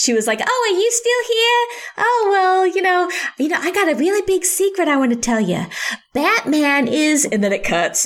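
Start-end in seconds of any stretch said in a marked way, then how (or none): 0.4-7.2 high-pitched cartoon character voice. Retelling a film's end-credit voiceover, cartoon Harley Quinn voice. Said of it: "I know I'm doing the cartoon Harley Quinn voice".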